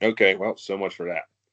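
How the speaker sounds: normal talking voice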